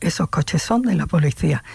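ordinary talk, nothing marked

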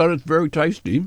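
mumbling around food while chewing. Eating ice cream and asked to describe it, talking with mouth full. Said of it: "it's rude to talk with your mouth full".

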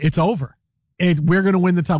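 plain

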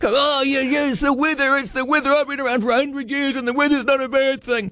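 high, put-on miserable, angry, grumpy old man voice. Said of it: "you sound like a miserable, angry old man".

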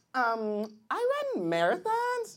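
put-on swooping, sing-song young woman voice.

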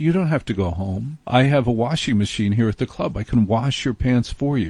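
normal talking voice

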